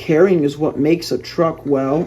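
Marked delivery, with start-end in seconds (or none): none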